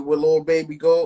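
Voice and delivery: ordinary talk, nothing marked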